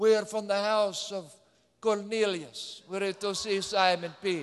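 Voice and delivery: put-on Eastern European accent. Retelling messengers from the house of cornelius asking for simon peter, in an eastern european accent. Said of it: "maybe an Eastern European accent".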